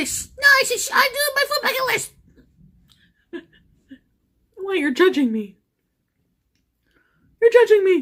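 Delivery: playful, petulant, little tantrum-style voice. Recounting announcing a food bucket list, the speaker acts out a mock tantrum. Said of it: "That was my tantrum".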